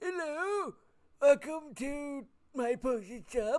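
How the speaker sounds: put-on very high-pitched, very old ancient wizard voice. Voicing an old potion-shop owner welcoming the group to his shop, very old man voice. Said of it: "really old. He kind of looks like a wizard".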